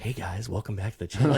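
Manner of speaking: whispered voice. Retelling recording a first video at home, imitating own past whisper. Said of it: "hears me whispering".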